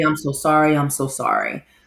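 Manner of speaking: ordinary talk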